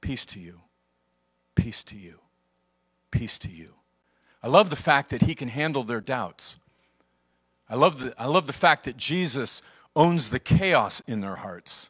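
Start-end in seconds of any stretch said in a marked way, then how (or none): 0.0-3.7 commanding yet very hushed, authoritative calm. The speaker acts out words spoken after the resurrection: retelling in authoritative voice. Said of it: "he says in an authoritative voice".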